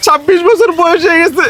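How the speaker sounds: tearful, high-pitched, close-to-crying voice.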